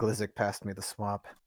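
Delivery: quiet, soft, low murmured voice.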